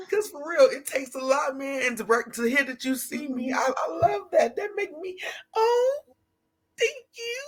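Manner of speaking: crying while talking. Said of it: "I'm crying".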